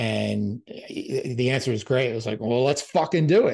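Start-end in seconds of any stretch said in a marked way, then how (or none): 2.4-3.6 bad, rough, horrible put-on Scottish accent. Retelling Alan's answer to his plan to present together, in a horrible Scottish accent. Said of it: "that's a horrible Scottish accent".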